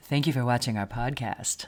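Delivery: low, put-on broadcast announcer voice. Closing out their podcast, putting on an announcer voice: put-on announcer voice. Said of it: "need to put on my announcer voice?".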